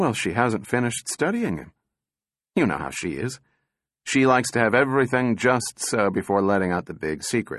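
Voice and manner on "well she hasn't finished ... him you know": plain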